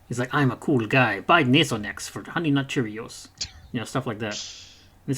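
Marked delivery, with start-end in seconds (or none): 0.3-3.2 slick, oily, suave smooth-talking charm. Mocking a game character who sounds greasy: suave Luis impression. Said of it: "Antonio Banderas suave".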